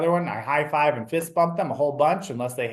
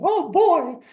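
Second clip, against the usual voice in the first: squeaked out, high and loud; 5 dB louder than usual. Speaker shows the character voice he loves doing for kids, Mickey Mouse voice. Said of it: "I've got a really good Mickey Mouse that I love to do".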